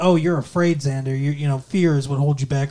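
normal talking voice

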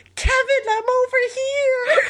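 shrill, very high, stretched-out fan scream. Retelling jumping on a chair at a concert, retelling a scream. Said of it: "I start screaming".

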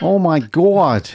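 bad, fake American accent. Podcast co-host greeting Gary at the start of an episode, bad American accent.

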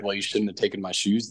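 put-on angry, unsympathetic, no-pity tone. Retelling what Josiah said about the taken shoes: imitating Josiah being mad. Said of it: "he was, like, mad about me using the shoes".

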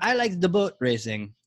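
put-on Iraqi accent. Telling the history of a lake, act out the dictator's son in a Uday impression with put-on accent. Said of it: "How's that for an accent?".

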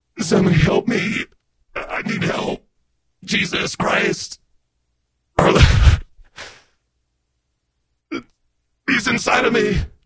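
intense, possessed-sounding pleading voice. Performing a requested line for listeners, sounding possessed. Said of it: "I thought you were actually possessed there".

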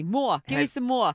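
put-on New Jersey accent. Echoing a British toddler who talks with an American accent, imitating a New Jersey accent. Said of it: "She sounds like she's from Jersey".

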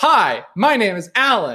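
over-animated, high, swooping stage voice. Demonstrating the voice not wanted in audiobooks or podcasts, loud animated voice. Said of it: "I'm going to back away from the mic for a second".

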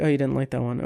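softly spoken. Recounting a show scene, retelling a character's reply, quietly. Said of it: "Rance just quietly says".

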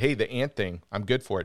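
ordinary talk

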